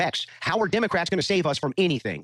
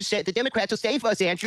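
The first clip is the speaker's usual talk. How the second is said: silly mocking put-on voice, much higher; 5 semitones higher than usual. Arguing about the war, parroting the opponent's position back at him: mocking weird voice. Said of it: "He has to do it too".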